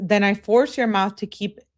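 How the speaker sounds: ordinary talk, nothing marked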